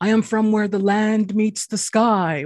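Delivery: impassive, super stoic, unbothered delivery. Retelling a movie scene where Frank Fencepost answers police: stoic Frank Fencepost voice. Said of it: "he just goes super stoic".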